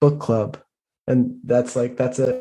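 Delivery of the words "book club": quick, secretive half-whisper. Voicing a character who hugs two friends close: half-whispering. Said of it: "And she just whispers".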